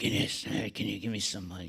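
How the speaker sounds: rough, rusty, rasping panhandler voice. Retelling a panhandler asking for money: imitating a rusty voice. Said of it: "it was a rusty voice".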